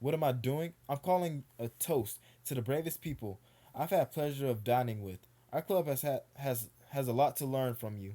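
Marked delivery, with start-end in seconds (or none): none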